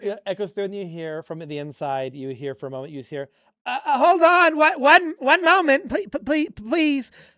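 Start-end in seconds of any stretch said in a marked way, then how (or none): 3.7-7.1 very high, very loud, flustered sputtering stammer. Voicing a flustered potion maker behind a door: sputtering voice. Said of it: "she sputters".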